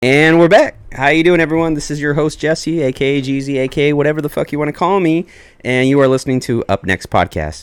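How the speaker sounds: loud, high-pitched, all said in one breath. A podcast host opens the new episode, all in one breath. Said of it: "I did that at one big breath".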